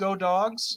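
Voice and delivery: ordinary delivery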